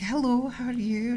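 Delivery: put-on high, slow, refined, genteel Scottish accent. Imitating a posh scottish great-aunt's greeting: imitating posh scottish relatives. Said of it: "They were quite posh".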